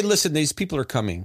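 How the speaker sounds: ordinary delivery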